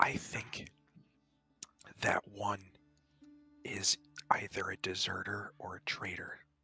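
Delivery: slow, hushed whisper. Warning a fellow party member named Walter about strangers: whispering. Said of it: "I'm, like, whispering".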